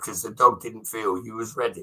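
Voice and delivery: ordinary delivery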